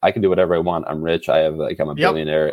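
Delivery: normal talking voice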